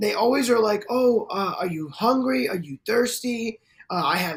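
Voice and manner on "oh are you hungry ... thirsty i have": caring, doting, fussing motherly voice. Describing how older women always act; imitating a doting motherly voice. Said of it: "they're always so like motherly and loving".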